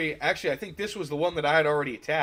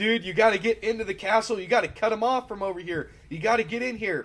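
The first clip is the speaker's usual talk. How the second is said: urgent, loud yelling; 5 semitones higher than usual. Retelling own orders to a teammate during a castle attack: retelling own yelling. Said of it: "I am yelling at Spetsnaz".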